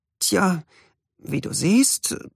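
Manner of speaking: faltering, stumbling words. Reading a character who doesn't know how to explain; stammering. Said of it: "stammelte Yadriel".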